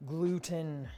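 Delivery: put-on grave, solemn, mock-serious voice. Saying a single word about the dough: mock serious voice. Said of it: "That is my serious voice".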